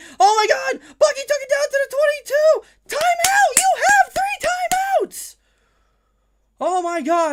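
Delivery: very high, very loud, shrill, swooping excited yell. Speaker calls Bucky's run and demands a timeout, high-pitched excited voice. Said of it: "I'm sorry for the high-pitched voice".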